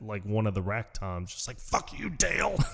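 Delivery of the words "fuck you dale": very high, scratchy, strained acted-out scream. Retelling a drummer screaming at a drum while playing out of spite; imitating someone screaming. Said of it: "he's screaming at".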